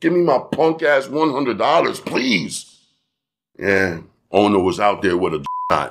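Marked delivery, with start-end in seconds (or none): 0.0-2.8 cajoling, pleading, begging tone. Retelling how he begged the owner for his money, retelling his begging. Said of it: "I begged him".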